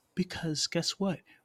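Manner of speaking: high, creepy, teasing voice. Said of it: "I'm using this creepy voice".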